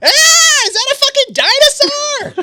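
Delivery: shrill, very high, very loud shriek. Voicing an unseen character who screams from the opposite corner: screaming. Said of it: "you hear this scream".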